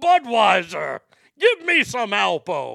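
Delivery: bad, loud, swooping sing-song voice. Doing an impression, then calling it bad. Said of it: "It was such a shitty impersonation".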